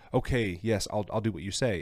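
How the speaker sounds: ordinary talk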